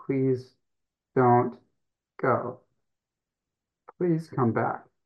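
pleading voice, halting, breaking off mid-phrase. Retelling begging a son to come back: retelling own begging. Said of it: "and I begged him".

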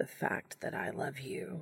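soft, husky, breathy whisper. Castiel speaking to Dean, his voice coming out huskier. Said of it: "his voice coming out huskier despite his determination to be cool about it".

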